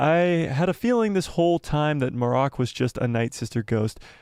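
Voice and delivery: ordinary talk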